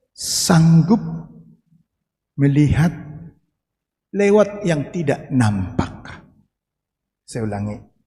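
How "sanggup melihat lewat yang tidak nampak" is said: slow, deliberate, measured word-by-word pacing. After announcing the point will be said slowly: slow and deliberate. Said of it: "Pelan-pelan saya sebutkan".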